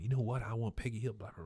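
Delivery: hushed half-whisper fading into nothing. Retelling a cartoon scene where a character leans in: retelling a character half-whispering. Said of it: "And then he starts whispering".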